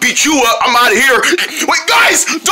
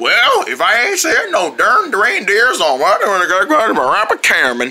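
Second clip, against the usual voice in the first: Wild West frontier cowboy drawl; 4 semitones lower than usual. Joining the group's western bit, speaking in old west cowboy talk. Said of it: "Why are we speaking like we're in the old West?".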